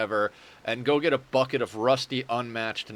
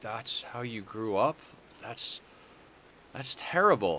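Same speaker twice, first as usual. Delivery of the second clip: heartbroken, dismayed voice full of heartbreak; 4 dB quieter than usual. Retelling a friend's reaction to seeing the childhood house: imitating Hannah's heartbroken voice. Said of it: "the heartbreak in her voice".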